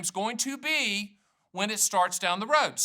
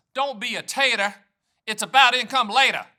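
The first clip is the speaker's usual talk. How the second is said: put-on Southern voice, louder; 6 dB louder than usual. Saying the video title and calling it Foghorn Leghorn: Foghorn Leghorn voice. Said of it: "That's kind of Foghorn Leghorn".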